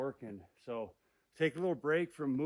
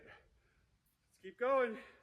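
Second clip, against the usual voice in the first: panting, out of breath, higher; 10 semitones higher than usual. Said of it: "why I'm panting".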